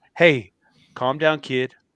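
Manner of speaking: put-on whisper. Retelling what a veteran wrestler whispered during a match: imitating Jerry's whisper. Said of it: "Jerry whispered in my ear".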